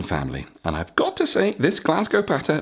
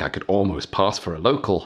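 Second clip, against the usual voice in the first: plain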